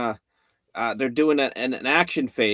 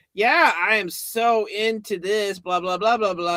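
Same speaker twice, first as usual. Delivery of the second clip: put-on, eager, high, slow fangirl gushing; 9 semitones higher than usual. Mocking a promo video's presenter: imitating a quirky fake geek girl. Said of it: "a hot, quirky kinda girl who's just like".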